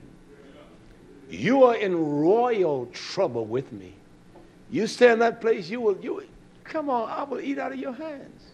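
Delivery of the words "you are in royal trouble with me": slow, weighty, drawn-out delivery. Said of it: "You're in trouble with me".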